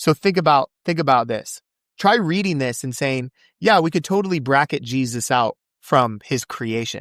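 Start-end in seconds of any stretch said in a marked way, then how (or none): none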